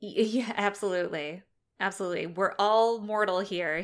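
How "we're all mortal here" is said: plain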